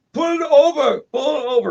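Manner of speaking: put-on heavy, thick Mexican accent, pitched very high. Retelling men in a car ordering him to pull over, thick mexican accent. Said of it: "with their thick Mexican accents".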